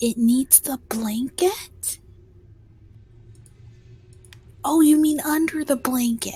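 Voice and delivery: whispering in character voice. Voicing a character who whispers back about a hidden creature: in-character whisper. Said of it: "she'll whisper".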